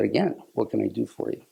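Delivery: ordinary delivery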